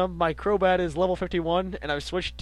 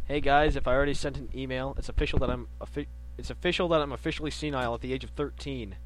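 ordinary talk, nothing marked

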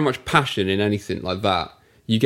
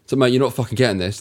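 nasty, mean-sounding delivery. Retelling a producer's words to a drummer: imitating a nasty producer. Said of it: "just being really nasty to Mike".

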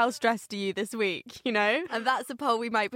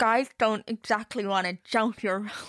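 put-on voice as if wearing braces. Quoting a film character's one line, imitating talking with braces. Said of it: "pretend I've got braces".

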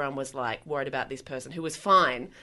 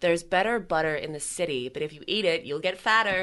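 put-on American accent; 2 semitones higher than usual. Saying a practice sentence after being asked for the accent: put-on american accent. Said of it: "Hello, hello, American [name]".

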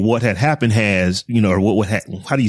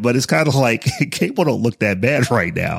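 facetious, words fighting off a stifled laugh. In a conversation, the speaker makes a facetious remark while holding back a laugh. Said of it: "I'm trying not to laugh as I say it".

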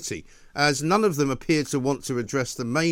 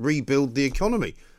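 usual speaking voice

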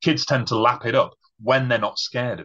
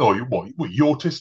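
mocking imitation voice, much slower; 3 semitones higher than usual. Retelling how others used a word as an insult, in a mocking imitation voice. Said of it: "I'm doing the voice again".

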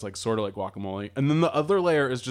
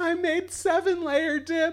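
mock laughing through tears, very high and slow. Picturing a party host serving the dip: imitating someone laughing through tears. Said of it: "crying, like, laughing through tears and saying".

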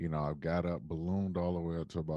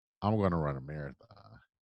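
tongue-in-cheek, mocking, sarcastic tone; 4 dB louder than usual. Retelling a remark made to a doctor: retelling own sarcastic remark. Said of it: "sarcastically, I said to him".

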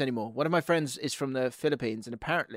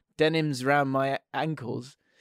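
normal talking voice

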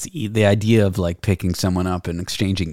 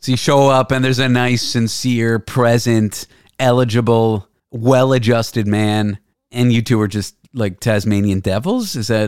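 normal talking voice

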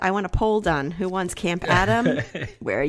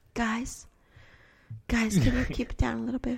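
mock meek, gentle pleading, higher and quieter; 3 semitones higher, 6 dB quieter than usual. Imitating a partner asking the kids to keep it down: imitating a meek request. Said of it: "That sounds just like me".

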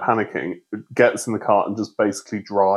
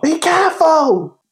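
very high, loud, called-out shout; 5 dB louder than usual. Retelling shouting from a car to a woman at the pump, retelling a shouted warning. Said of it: "I shouted to the woman at the pump".

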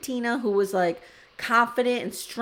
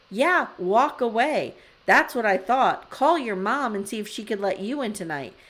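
ordinary talk

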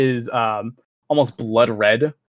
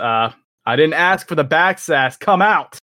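voice raised, pushed a bit harder; 4 semitones higher, 3 dB louder than usual. A character calls toward the tower again, raising her voice: raised voice. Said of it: "raising her voice again and just says".

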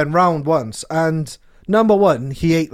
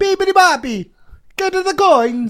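very high, thick, cartoonish, exaggerated Italian accent. Doing an impression of Mario, Mario voice, exaggerated Italian accent. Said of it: "I'm doing an impression of Mario".

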